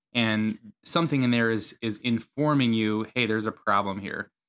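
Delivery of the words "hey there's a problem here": usual speaking voice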